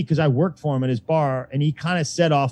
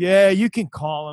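beaten-down, defeated, resigned, giving-in tone. Retelling his own reply to a booker: imitating sounding defeated. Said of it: "I was so defeated".

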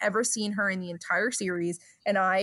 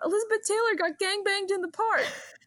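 put-on piercing, shrill, very high-pitched scream; 12 semitones higher than usual. Telling the story of a woman showing up at the dog park: retelling a scream. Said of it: "she just screams out".

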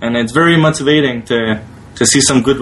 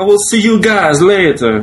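put-on Italian accent, pitched up; 5 semitones higher than usual. Host signing off and thanking listeners, in a put-on italian accent. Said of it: "was that a good Italian accent?".

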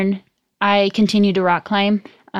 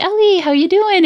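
put-on cute little baby voice, very high; 11 semitones higher, 4 dB louder than usual. Retelling how other climbers greeted Ellie on the swing, cute little baby voice. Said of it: "talk to her in that like cute little baby voice".

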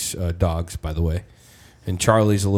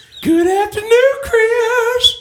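very high, loud put-on voice; 7 dB louder than usual. Trying an impression after being urged to give it a go: Herbert the Pervert voice. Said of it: "You gotta try".

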